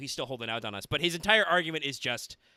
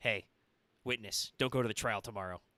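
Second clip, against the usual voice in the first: menacing character voice, lower and quieter; 4 semitones lower, 4 dB quieter than usual. Picturing a character lurking in corners and warning a witness: voicing Claymore threatening a witness. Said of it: "Claymore might be, you know, lurking in corners, smoking cigarettes, being like".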